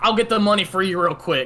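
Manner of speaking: put-on broad Southern accent laid on thick, rattled off. Speaker quotes a man at a garage, in a thick Southern accent. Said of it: "like in this thick Southern accent".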